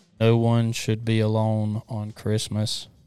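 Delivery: level, expressionless, flat monotone delivery. Playing a game of saying christmas movie lines for guessing: monotone. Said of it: "This is the monotone Christmas line game".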